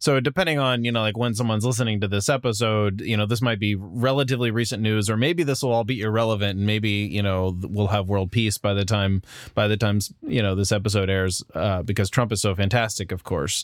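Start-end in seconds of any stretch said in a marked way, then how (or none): none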